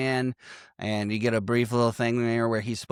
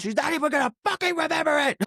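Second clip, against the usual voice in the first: imitated angry snapping outburst, higher. Retelling a film scene where a husband snaps at his wife: imitating someone snapping angrily. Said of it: "he snaps the holy fuck out on her".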